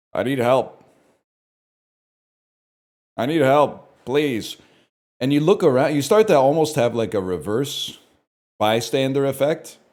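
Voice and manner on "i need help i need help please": mock pleading voice, groaning throughout. Recalling an older guy who was not having a great time, imitating a man groaning. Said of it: "He was like like groaning".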